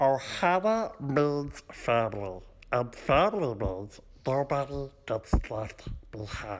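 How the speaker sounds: mock cartoonish alien voice. Doing a best celebrity impression of a cartoon character: Stitch voice. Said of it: "my best celebrity impression".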